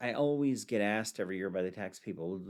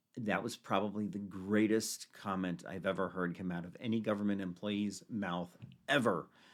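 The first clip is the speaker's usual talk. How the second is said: ordinary talk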